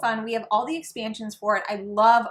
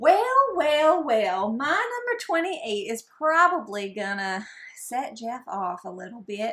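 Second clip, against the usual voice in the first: sudden, slow, drawled southern accent. Announcing the next ranked game: southern accent. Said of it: "I don't know why I just developed a southern accent".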